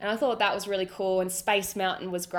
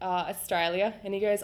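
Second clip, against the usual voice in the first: usual speaking voice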